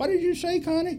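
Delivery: put-on tiny high voice. Telling how a plane might blow up, the speaker quotes Vince's reply in a little bitty voice. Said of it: "in a little bitty voice".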